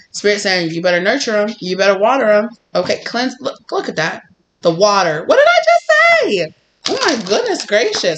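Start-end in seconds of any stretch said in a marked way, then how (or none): 5.3-8.2 sudden, squeaky, high-pitched outburst. Speaker giving a spirit message reacts to what they just said, high-pitched exclamation. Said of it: "I got a little high pitch there".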